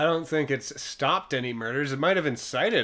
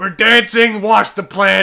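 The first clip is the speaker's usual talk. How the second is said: louder, higher psychopathic voice. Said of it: "Just a psychopath dad".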